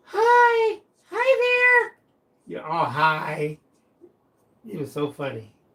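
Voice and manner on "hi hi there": put-on very high, loud, tiny little-kid voice. Retelling how Diamond sounded as a very little boy: Diamond's little kid voice. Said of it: "his voice is like".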